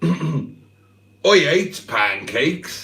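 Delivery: put-on West Country accent. Reading out a message from Barry, voicing him in a West Country accent. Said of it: "should have a West Country accent".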